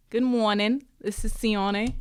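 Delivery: put-on Australian accent, Sydney style. Prompted to play someone from Sydney, doing an Australian accent impression. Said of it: "Aussie impression".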